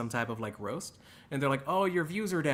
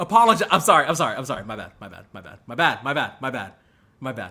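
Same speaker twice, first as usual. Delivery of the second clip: very loud, snide, passive-aggressive tone; 9 dB louder than usual. Apologizing over and over to a chat: passive-aggressive apology. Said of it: "I'm being passive-aggressive".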